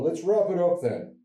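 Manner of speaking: high, loud show-closing announcer voice.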